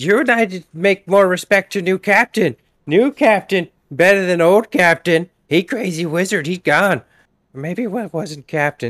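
loud hollering, yelled put-on character voice. Shmi tries to yell across to the lizard folk, yelling in character. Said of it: "trying to yell to them and be like".

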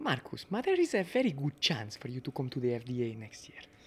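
put-on slow, sing-song Italian accent. Retelling what Massimo told the driver: Italian accent imitating Massimo. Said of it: "Try and put on the Italian accent".

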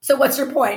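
snide, sarcastic, so-what tone. Acting out a reply to parents worried about tantrums: acting out a sarcastic reply. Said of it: "in a sarcastic way".

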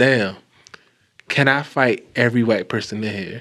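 normal talking voice

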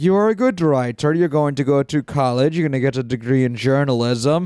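ordinary talk, nothing marked

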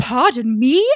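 put-on faint, vaguely British accent. Reading out a line, speaking as Catherine in Catherine's vaguely British accent. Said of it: "Catherine has a slight accent that's vaguely British, which is why I'm doing that voice".

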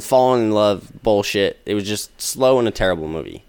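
ordinary delivery

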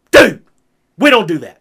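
very loud, growling, fatherly dad voice. Retelling warning someone who had just hit a button, growled in dad voice. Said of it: "I growled it in my dad voice".

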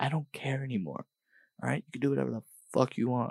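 secretive whisper. Speaker telling the listener a secret, whispering. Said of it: "That's why I'm whispering".

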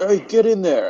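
high, put-on childlike kid voice. Retelling what a kid shouted on seeing the speaker, put-on kid voice. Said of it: "This is a kid voice".

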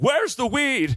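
shrill, very high screaming shout, acted out. Telling a story about a guy reading a newspaper, retelling own screaming at him. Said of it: "I'm just screaming at him".

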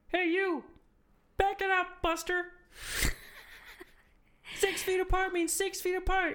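very high, put-on cartoon puppet frog voice. Asked on the spot to do Kermit the Frog voice. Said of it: "Is it like my Kermit the Frog voice?".

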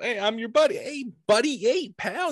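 very high, overfriendly, chummy buddy-buddy voice. Describing good cop, bad cop from TV: imitating a friendly good cop. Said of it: "One cop comes in and".

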